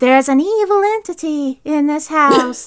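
high, slow, drawn-out voice. Describing a psychic medium in a movie: imitating Zelda Rubinstein's voice. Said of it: "this very recognizable voice".

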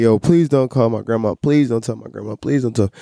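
put-on tearful voice. Recounting getting into a school fight, retelling crying and begging. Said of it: "And I'm crying".

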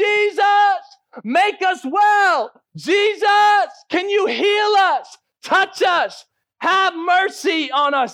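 put-on drawn-out calling from afar, very high, slow. Retelling lepers calling out to jesus from afar: imitating lepers yelling. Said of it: "So they're yelling".

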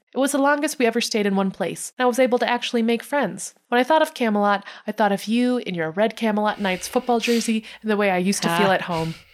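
ordinary talk, nothing marked

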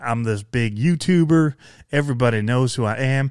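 ordinary talk

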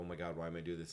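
plain

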